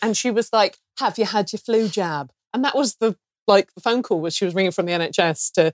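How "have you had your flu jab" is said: motherly mum voice. Retelling a phone call from an NHS caller: imitating a caller who sounds like a mum. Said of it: "she sort of had that sort of voice".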